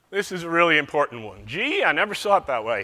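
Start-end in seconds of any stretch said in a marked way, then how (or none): 1.4-2.8 attempted, put-on American southern accent. Speaking to an audience, the speaker keeps up his attempted southern accent. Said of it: "I'll continue with the southern accent".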